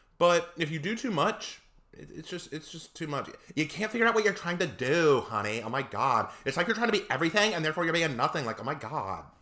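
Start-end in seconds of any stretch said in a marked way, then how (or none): 3.6-9.2 clumsy, really bad put-on Valley Girl voice. Critiquing flashy designs in a put-on voice: bad valley girl impression. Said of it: "a really bad Valley Girl impression".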